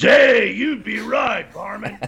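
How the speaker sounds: grisly voice, pitched very high. Replying to another speaker's question, still in grisly Yosemite Sam voice. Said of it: "Yosemite Sam because it's such a grisly voice".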